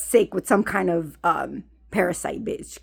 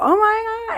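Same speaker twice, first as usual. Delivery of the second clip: put-on screaming exclamation, very high. Retelling being six and screaming in the bathroom: retelling own past scream. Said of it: "I'm screaming".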